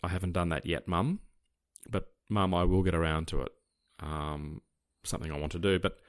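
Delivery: normal talking voice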